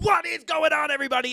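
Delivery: high, hyped-up, screaming delivery. Retelling how the intros sound nowadays: imitating own screaming intro. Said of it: "I'm screaming".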